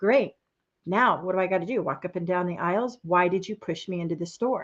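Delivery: put-on hushed sarcastic inner voice. Retelling walking into the wrong store: retelling own sarcastic thoughts. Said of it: "my little sarcasm shuts up, starts".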